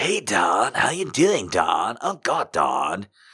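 laid-back, slow, drawn-out surfer-dude drawl. Retelling how everyone in the audition waiting room read the part, surfer voice. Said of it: "everybody else in the waiting room was doing a surfer voice".

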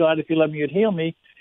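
plain

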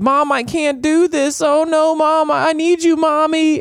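acted out scared begging, very high and very slow. Retelling a horror movie scene where the daughter begs her mom: imitating a cowering plea. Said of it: "she was cowering".

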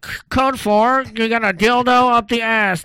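loud, slow, intercom-style announcer delivery.

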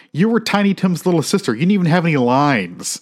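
mock snotty, bratty kid yelling outburst. Retelling what a kid yelled at his sister: imitating a kid yelling. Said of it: "and he yells".

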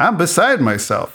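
high, wide-ranging snide tone.

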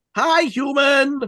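sweet, friendly, very high pitched. Repeating a creature's greeting to those it eats, said mock-sweetly and friendly. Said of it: "But you say it so nicely".

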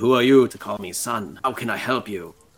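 put-on, slightly holier, divine-sounding voice. Told to make the voice five percent holier, a player speaks again, slightly holier. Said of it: "5% holier".

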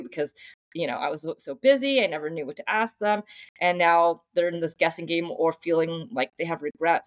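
ordinary talk, nothing marked

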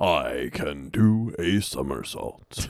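pitch dropped as low as it can go. Performing a Ralph line after being asked: James Earl Jones voice as Ralph. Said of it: "in James Earl Ralph, please".

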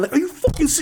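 acted near-yell. Retelling reacting to a plant with their kid nearby; retelling almost yelling. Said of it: "almost yelling at this plant".

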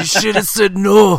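put-on loud, high-pitched blend of Scottish and New York accents. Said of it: "never heard a Scottish New York accent".

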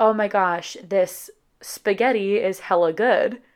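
ordinary talk

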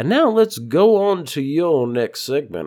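put-on Southern man's accent. Speaker closing out a thought and moving on to the next segment, Southern accent. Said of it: "I don't know why I became Southern man".

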